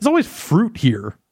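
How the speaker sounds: indignant, very high-pitched outburst. Answering a question about who left food out: indignant. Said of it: "You said that so indignantly".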